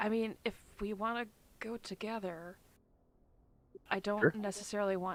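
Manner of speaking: stage whispering. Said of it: "this is still all whispering".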